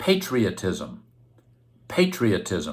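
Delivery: "patriotism" said very slowly, carefully and clearly.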